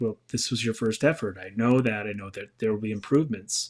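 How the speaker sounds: ordinary talk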